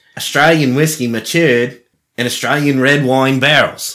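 poor, bad fake Australian accent. Describing an australian whiskey, the speaker tries out a bad australian accent. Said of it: "Did I do that okay?".

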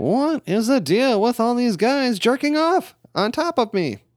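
bad, very high put-on stand-up comedian delivery. Answering with a Seinfeld impression: Jerry Seinfeld impression. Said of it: "my impression of Jerry Seinfeld".

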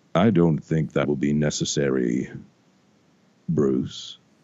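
put-on somber voice. Retelling a story, voicing the voice from the box speaking to Bruce: putting on a somber voice. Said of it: "you hear this somber voice".

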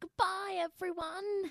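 put-on British accent. A mother's eleven-year-old daughter says goodbye to the listeners, British accent. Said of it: "That's her British accent".

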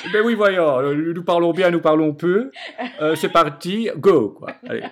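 prissy, snooty, affected, stuck-up little put-on voice. Answering the co-host's teasing about the voice: put-on stuck-up voice. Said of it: "je reprends une voix normale".

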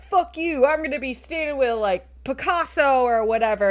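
put-on screaming. Retelling a story of Nicolas Cage yelling at a man, mock-screaming. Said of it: "screaming at him".

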